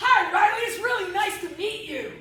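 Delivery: very loud, very high-pitched, aggressive voice. Demonstrating body language for avoiding bullies, an aggressive introduction. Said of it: "Then there's an aggressive introduction".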